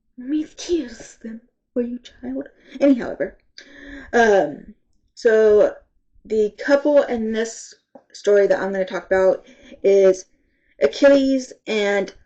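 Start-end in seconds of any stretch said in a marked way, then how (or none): 0.2-2.5 put-on sassy grandma voice with snake accent. Quoting the snake character from a book: put-on sassy grandma snake voice.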